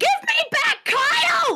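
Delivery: very high-pitched, all-out screaming. A player character confronting a malevolent book during a dice-roll scene, screaming. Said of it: "I'm just screaming at this book".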